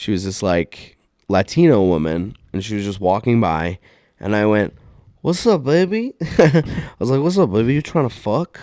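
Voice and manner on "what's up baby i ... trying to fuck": put-on drunk voice, higher. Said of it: "I was so fucking hammered".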